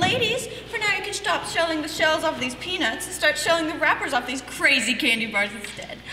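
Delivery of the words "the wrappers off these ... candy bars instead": plain reading voice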